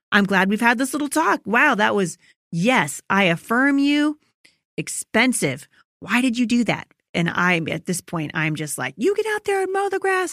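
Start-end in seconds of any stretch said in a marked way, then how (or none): 8.9-10.3 fast, high-pitched yelling. A parent recounts correcting their child, retelling yelling at a kid. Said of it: "And I'm yelling at my kid".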